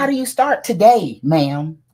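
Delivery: deliberate, high, drawn-out yell. Asking the other speaker how to start, after being told to ask: yelling. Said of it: "you ain't gotta yell at me".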